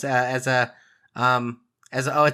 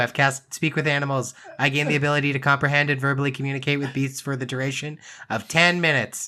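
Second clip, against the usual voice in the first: plain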